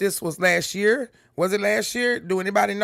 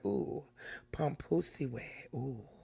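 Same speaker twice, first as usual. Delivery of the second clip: sassy, slow, breathy whisper; 5 semitones lower, 15 dB quieter than usual. Showing how the phrase should be said: Marilyn Monroe voice. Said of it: "Kinda like a Marilyn Monroe".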